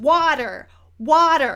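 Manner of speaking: slow, loud patronizing yelling. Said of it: "she's yelling at the waitress".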